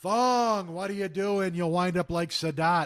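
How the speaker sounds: very loud, high, carrying foghorn holler. Act out a man calling to someone who ran out among the arrows, in Krushka's foghorn voice. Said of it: "he's got that fucking voice you can hear for a mile".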